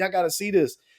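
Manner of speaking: acted-out excited, hysterical, high and frantic voice. Retelling how a brother and uncle ran in calling everyone outside, imitating hysterical yelling. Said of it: "they were just yelling like hysterical".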